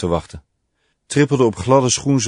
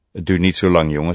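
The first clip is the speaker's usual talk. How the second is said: ordinary delivery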